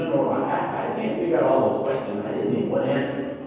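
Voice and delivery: ordinary talk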